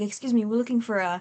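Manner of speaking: mild and unassuming tone. Describing a scene, the speaker acts out a man's polite line, imitating soft-spoken speech. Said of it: "soft spoken".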